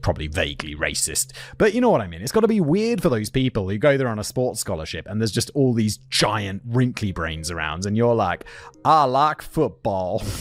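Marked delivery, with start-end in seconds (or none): 8.8-10.2 slow, drawn-out Southern drawl. Imagining a sports-scholarship student among brainy classmates, in a Forrest Gump accent. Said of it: "It's like Forrest Gump accent".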